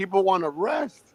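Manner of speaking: mock angry outburst. Retelling a dispute over loud sunday music, imitating someone getting mad. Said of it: "that's when he got mad".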